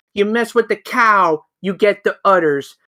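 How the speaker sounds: ordinary talk, nothing marked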